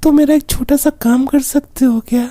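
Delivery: high, sweet, fake girl voice.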